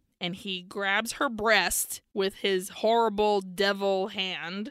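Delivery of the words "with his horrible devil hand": normal talking voice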